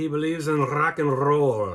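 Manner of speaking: horrible fake Scottish accent. Describing a man who believes in rock and roll: horrible Scottish accent. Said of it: "That's my horrible Scottish accent".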